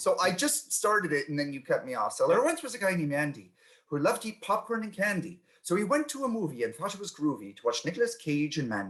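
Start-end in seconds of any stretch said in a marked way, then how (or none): 2.1-8.9 put-on British accent, read aloud. Reading a limerick again after the chat asks: british accent. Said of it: "read it again with a British accent".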